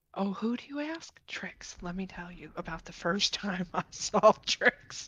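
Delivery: quiet, slow whispering. Playing a character who whispers to a dragon about Trix: whispering in character. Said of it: "I'm gonna whisper to the dragon".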